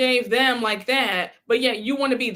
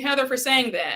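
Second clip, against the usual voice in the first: plain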